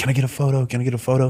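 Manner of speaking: mimicked whisper. Retelling how fans in a hotel lobby asked for a photo, imitating fans' whisper. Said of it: "Some people are like kind of whispering".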